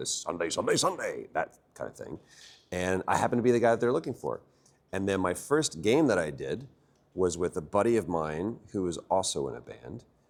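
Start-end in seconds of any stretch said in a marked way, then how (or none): 0.1-1.3 pumped-up, hyped radio advert announcer voice. Recalling helping a studio with their car adverts, in a radio car advert voice. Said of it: "just did what I'd always heard on the radio".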